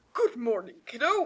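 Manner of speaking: put-on low, deep storybook character voice. Reading a story aloud, voicing a man greeting Harry, deep voice. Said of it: "I'm trying to do a deep voice".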